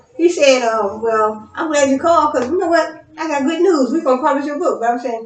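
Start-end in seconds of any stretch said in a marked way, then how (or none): 1.0-4.8 play-acted cheerful, upbeat, happy, pitched-up tone. Retelling what the publisher said on the phone: imitating a happy tone. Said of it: "You said it in a happy tone".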